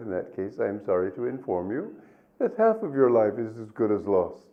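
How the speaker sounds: normal talking voice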